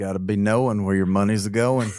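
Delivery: bad, heavy Southern drawl with rhythmic delivery. Quoting a preacher in a Southern drawl: Andy Stanley accent. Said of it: "the worst Andy Stanley accent".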